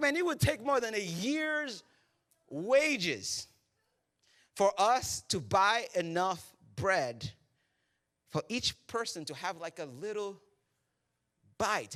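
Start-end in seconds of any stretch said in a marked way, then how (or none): none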